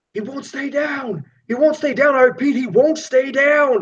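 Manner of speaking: frantic, panicked yelling, very high-pitched. Voicing a cop on the radio yelling for backup: panicked cop shouting for backup. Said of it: "you hear him shouting".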